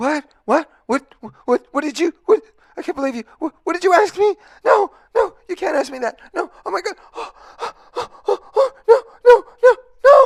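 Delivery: very high, loud, chaotic, anxious frantic babble. Demonstrating a reactive behavior after being asked why: acted anxiety and chaos.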